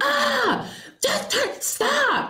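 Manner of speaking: sudden yell, very high and drawn out. Retelling how a friend in the car snapped: imitating someone yelling. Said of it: "yelled at me out of nowhere".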